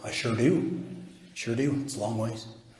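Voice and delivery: near-whisper, breathy and hushed. Acting out a volunteer's reply about the distant stars: imitating McCoy's voice. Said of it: "Am I sounding like him?".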